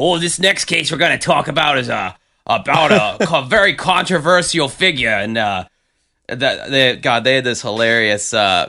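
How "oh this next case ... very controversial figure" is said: put-on high-pitched, full, whole-hearted Chicago accent. Imitating a TV mystery show host with a Chicago vibe: Dennis Farina Chicago vibe. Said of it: "that whole Chicago vibe".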